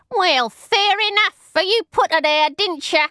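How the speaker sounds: very high, squeaky, rat-like little voice. Reading the story, voice Squeaky interrupting the narrator, in rat-like tones. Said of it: "the rat-like tones of the vicious little cutthroat".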